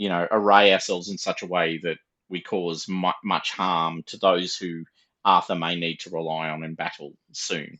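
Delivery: very low, grave, serious, hushed tone. Voicing a character in a narrated story, very serious tone. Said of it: "he says this with very serious, a very serious tone".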